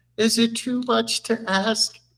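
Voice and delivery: put-on sweet, coy, high, flirtatious pleading voice. Speaker retells a man asking his best friend for something, imitating a coy, flirty plea. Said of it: "bats his eyelashes at her".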